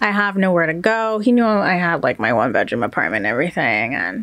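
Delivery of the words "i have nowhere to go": usual speaking voice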